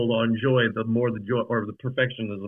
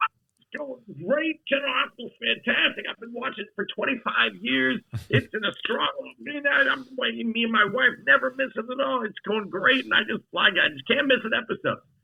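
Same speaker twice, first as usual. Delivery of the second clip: put-on delighted, gushing old voice, very high in pitch. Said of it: "he goes".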